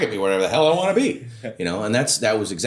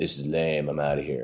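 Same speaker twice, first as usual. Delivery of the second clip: soft, hushed half-whisper; 7 semitones lower, 5 dB quieter than usual. Retelling what a cousin half-whispered in a bar: imitating a half-whisper. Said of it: "whisper in my ear and say".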